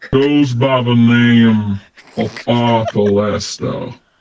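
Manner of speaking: unhurried, slow drawl with words drawn out. In a role-play scene, the speaker's character answers, drawling even slower. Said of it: "drawing even slower".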